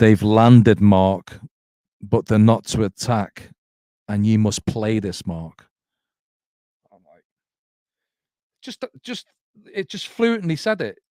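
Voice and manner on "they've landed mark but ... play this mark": thick, very broad, deep voice, very loud. Speaker recounts a voice that came through a radio: very broad voice. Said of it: "it's a very broad voice".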